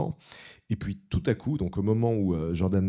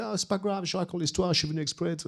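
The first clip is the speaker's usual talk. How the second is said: put-on American accent, much higher pitched; 10 semitones higher, 3 dB quieter than usual. Retelling what Jordan said when warned the rain would drown him out; imitating Jordan's American accent. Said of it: "il a l'accent américain".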